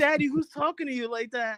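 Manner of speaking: very high, whiny little puppy voice. Voicing the pet dog defending its owner: put-on whiny dog voice. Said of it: "Starts whining like".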